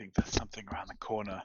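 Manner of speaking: whispering in character. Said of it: "I try to whisper to everybody".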